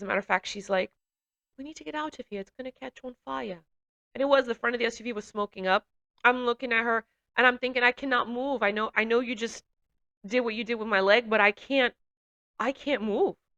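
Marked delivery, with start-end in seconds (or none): 1.6-3.6 put-on British accent, very quiet. Recalling the woman assessing her by the smoking SUV, imitating her British accent. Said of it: "She spoke with a British accent".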